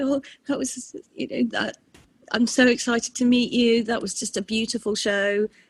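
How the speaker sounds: put-on tearful blubbering. Speaker retells what they said to her after the show, retelling crying speech. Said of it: "I was still crying and being completely pathetic".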